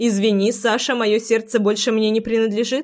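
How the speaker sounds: ordinary delivery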